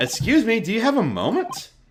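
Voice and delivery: clumsy attempted British accent. Voicing a character after announcing an attempt at a british accent. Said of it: "I'm gonna attempt a British accent".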